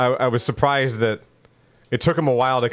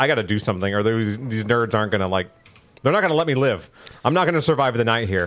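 ordinary talk, nothing marked

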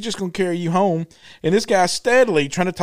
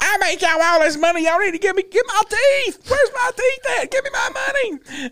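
shrill, very high, rising screaming rant; 14 semitones higher than usual. Retelling a woman on a show screaming from far away: imitating someone screaming. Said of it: "still over there screaming".

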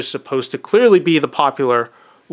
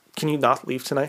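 put-on panicked, frightened whisper, quieter; 7 dB quieter than usual. Retelling a movie scene where a character begs another to stay: imitating a panicked whisper. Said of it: "out of panic, like, almost just whispers it".

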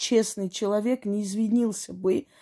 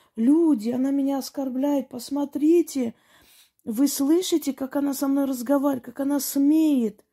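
put-on wronged-victim outcry, mild, high-pitched, half-yelled; 5 semitones higher than usual. Recounting a customer who harassed a saleswoman, acting out her yelling. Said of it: "она тут же начинает орать".

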